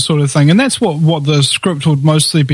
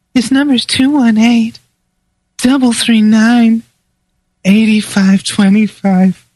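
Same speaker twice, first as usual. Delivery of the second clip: sexy, seductive female voice, pitched higher; 6 semitones higher than usual. Show host repeats the call-in number for listeners in a sexy female voice. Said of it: "maybe I could do it in a sexy female voice".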